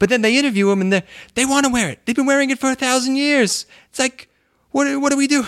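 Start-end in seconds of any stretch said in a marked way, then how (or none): 0.0-3.7 very high put-on speaking voice. Retelling a funny clip of Trump talking about the hijab: Trump impression. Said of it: "and then he goes like".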